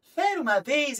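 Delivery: put-on, squeaky, very high, exaggerated storyteller voice. Mimicking a children's storyteller starting a tale: very high storyteller voice. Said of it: "começa a falar muito agudo".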